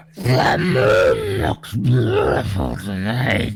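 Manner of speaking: very deep, low gurgling croak. Narrating a story, the figure stepping toward you speaks, croaking, gurgling voice. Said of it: "A croaking, gurgling voice fell out of his mouth".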